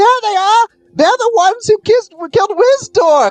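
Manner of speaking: tiny creature voices shouting. Narrating a crowd of gnomes spotting the players leaving the carnival: little gnome voices shouting. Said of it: "a bunch of little voices shout out".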